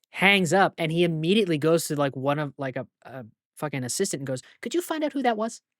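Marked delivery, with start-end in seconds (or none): 4.6-5.5 mock breezy, offhand, casual, nonchalant, pitched slightly high. Retelling how a man hung up on a cartel and turned to an assistant, mock-nonchalant. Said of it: "nonchalantly and casually".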